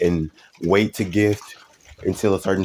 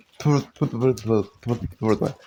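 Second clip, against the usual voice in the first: mouth full, muffled speech, higher; 3 semitones higher than usual. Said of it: "I got something in my mouth".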